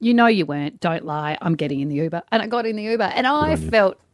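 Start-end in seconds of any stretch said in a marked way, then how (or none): 0.0-2.2 put-on motherly tone, lower pitch. Mother retelling what she said walking past him to the Uber, in a motherly tone. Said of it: "in my greatest motherly tone".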